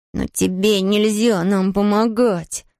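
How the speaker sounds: hissed, sharp hissing voice. Narrator reading a character's retort over his shoulder to a companion, hissing. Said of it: "прошипел Том через плечо".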